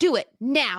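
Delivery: loud shouted yell. Urging listeners to subscribe before reaching two hundred: yelling. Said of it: "I didn't mean to yell at you".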